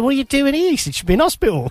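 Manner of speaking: put-on half London accent. Retelling what a director said on the stairs, in a semi-London accent. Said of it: "In a semi-London accent like that".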